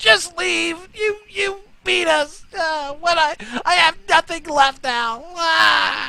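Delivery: very high, grief-stricken, mourning cry. Voicing a goblin on his knees over his fallen friend: goblin mourning his friend. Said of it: "basically mourning the loss of his".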